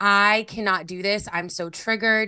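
imitated crying and sobbing. Retelling a friend bawling her eyes out: imitating someone crying. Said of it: "bawling her eyes out".

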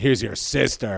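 biting, pointed sarcasm. Quoting a line from the week's Torah portion, sarcastic quote. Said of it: "the sarcasm".

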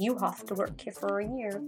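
put-on English accent. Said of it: "such an English accent".

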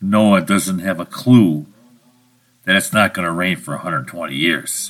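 low, quiet whisper. Speaking as God in an aside Noah should not hear: whispering aside as God. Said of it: "this is me kinda whispering to you".

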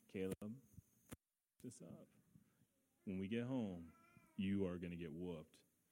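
put-on stern, very low, hushed menacing voice. A parent retells how they threatened their son caleb, retelling a threat. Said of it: "But we threatened".

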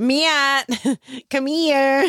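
Chicago-accented everyday speech, calling out. Speaker from Chicago calls out to Matt, doing a John Candy voice. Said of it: "you just hear John Candy in me".

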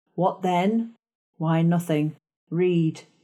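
plain

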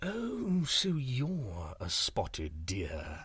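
very slow, drawn-out, swooping tiger growl. A tiger questions a spotted deer it has found, growled. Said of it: "growled the tiger".

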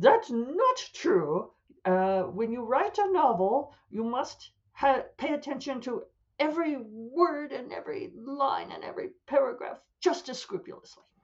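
huffy indignation. Mimicking writers who get very huffy about this, in a mock-huffy writer voice. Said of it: "That's the voice they use".

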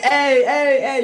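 put-on high, pained yelping and screaming cries. Telling a joke, acting out the farmer beating the monkey, retelling his scream. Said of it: "He's screaming".

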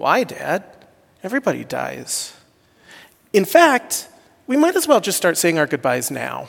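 matter-of-fact, sweet goofy voice with swooping sing-song. Father retelling his daughter's matter-of-fact reply, imitating Gabby's sweet goofy voice. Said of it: "in her sweet, goofy voice, says, and matter-of-factly".

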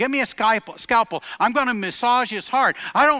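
shouting, pitched high. Retelling a surgeon's urgent call during surgery: retelling a shout. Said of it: "shouts out".

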